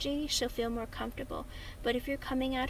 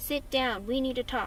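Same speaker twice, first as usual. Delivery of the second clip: angry, bossy, harsh, demanding tone; 4 dB louder than usual. Advising how not to start a talk with her, in a harsh demanding tone. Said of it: "Don't be demanding. Don't be angry. Don't be like".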